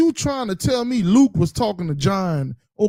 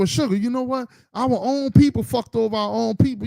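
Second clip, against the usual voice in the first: normal talking voice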